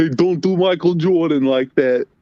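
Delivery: put-on abrupt Italian accent. Asking why a man suddenly spoke with an accent, quoting him: imitating Michael's Italian accent. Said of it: "speaking with like an Italian accent".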